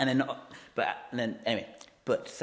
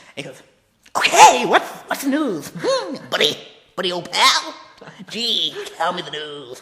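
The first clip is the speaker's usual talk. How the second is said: creepy villain voice, higher, louder; 6 semitones higher, 11 dB louder than usual. The co-hosts decide to talk like the Joker today; Cesar Romero Joker voice. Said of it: "so we're going to talk like this today".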